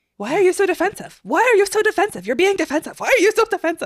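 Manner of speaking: super shrill, very high, very loud, piercing, repeated. Recalling a favorite moment when a woman kept repeating herself, imitating a super shrill voice. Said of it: "repeating super shrill".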